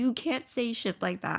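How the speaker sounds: plain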